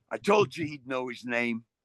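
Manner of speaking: normal talking voice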